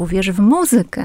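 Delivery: careful, formal MUzykę with stress on MU. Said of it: "powinniśmy powiedzieć".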